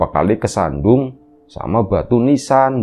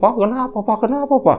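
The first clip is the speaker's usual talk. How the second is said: play-acted frantic, panicked, very high-pitched voice; 12 semitones higher than usual. Retelling a wife opening the door to her husband: imitating a panicked wife. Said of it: "dengan paniknya".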